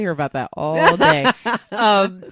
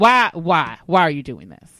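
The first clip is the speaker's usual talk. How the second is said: put-on nagging voice, lower; 4 semitones lower than usual.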